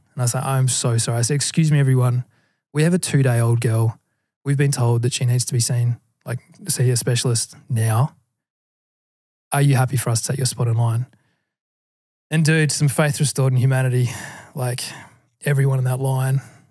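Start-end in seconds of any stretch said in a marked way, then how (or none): none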